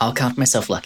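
heavy, obvious, dry sarcasm. Answering another character's remark about seeing a first: sarcastic. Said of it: "Did I catch sarcasm in that?".

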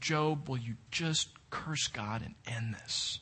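acted-out despairing tears. Retelling what Mrs. Job says to her husband, imitating tearful despair. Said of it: "eyes filled with tears, shaking in despair".

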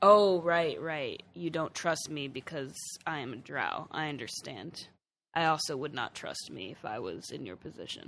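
put-on flat deadpan tone. Retelling their reply to guards who doubt them, retelling a deadpan reply. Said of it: "I just deadpan look at them and I'm like".

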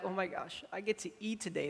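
put-on excitement. Describing a scene where a hungry person catches a squirrel, mimicking super excited person. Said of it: "the person's like super excited".

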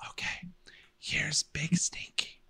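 slow, hushed, drawn-out smart-speaker assistant whisper. Imitating how Alexa whispers when told to fart: imitating Alexa's whisper. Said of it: "Her whisper is so funny 'cause she's like".

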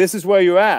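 usual speaking voice

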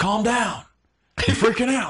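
very high, shrill screaming. Retelling how Joe Biden screamed at a man and grabbed his coat: imitating Joe Biden screaming. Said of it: "he's the one screaming in this guy's face".

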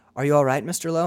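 ordinary talk

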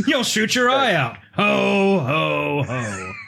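weird, creepy character voice. Agreeing with a co-host, imitating the creepy Santa from A Christmas Story. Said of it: "creepy Santa from Christmas Story".

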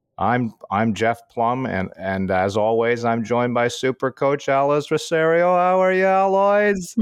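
slow, put-on English or Australian accent. Retelling how his son answers spam calls with a borrowed intro, in a put-on English or Australian accent. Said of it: "he has this English accent or Australian accent".

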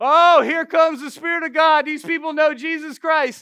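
mock taunting tone. Retelling what a demonic spirit kept saying, mimicking its mocking taunt. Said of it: "started like mockingly saying".

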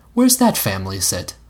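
ordinary talk

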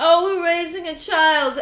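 high rich New Yorker voice. Describing wealthy people in New York, doing an impression of wealthy New Yorkers. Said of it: "wealthy people are like".

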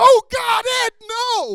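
very high, very loud, slow, drawn-out desperate voice. Retelling refusing an offered cheesecake, acting like a tempted addict refusing. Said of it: "acted like a former crack cocaine addict".

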